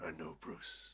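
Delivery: growling villain voice. Retelling what Harvey said to Bruce in a comic plot: growled Two-Face impression. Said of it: "I quite liked the growl you did there".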